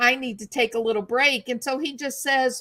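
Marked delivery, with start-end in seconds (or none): 0.0-1.5 mock begging, pleading tone. Retelling how someone asked for a break: imitating someone pleading. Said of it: "as he's pleading and begging".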